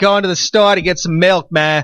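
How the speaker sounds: put-on Boston accent. Demonstrating the Bostonian accent the speaker has been doing a lot. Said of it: "in my normal accent".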